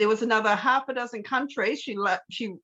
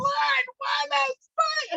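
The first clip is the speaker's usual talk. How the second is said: put-on screaming, shrill and very high-pitched. Retelling how a woman at a Hobart speech stood there: imitating a woman screaming. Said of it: "she just stood there just screaming".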